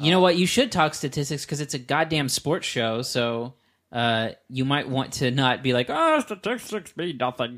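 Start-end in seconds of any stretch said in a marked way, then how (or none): 5.9-7.6 high-pitched voice with swooping pitch. Mocking a co-host who dismisses statistics: Jared impression. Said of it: "That's my Jared impression".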